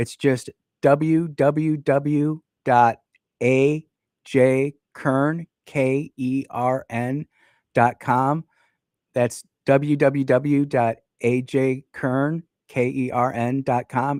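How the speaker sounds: spoken really slowly. Speaker spells out a web address people asked for, very slow. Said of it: "I'm going to say it really slowly".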